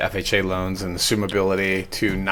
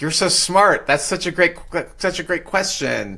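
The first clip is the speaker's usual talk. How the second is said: high, seductive female AI voice. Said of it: "this seductress female voice says things to you like".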